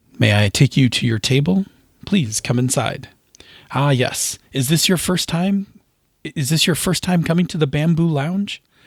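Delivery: completely earnest, solemn, super serious host voice. Welcoming a guest to the Bamboo Lounge in a bit, super serious voice. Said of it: "Let me try a super serious".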